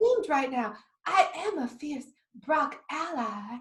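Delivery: soft, airy, wispy, breathy Southern drawl. Retelling a talking broccoli character; wispy southern drawl. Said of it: "this like southern drawl thing".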